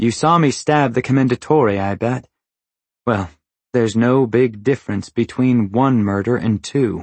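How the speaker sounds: ordinary delivery, nothing marked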